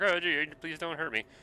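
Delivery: high, timid, fearful, nervous pleading. Retelling own earlier words: imitating own past nervous plea. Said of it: "the last time I was like".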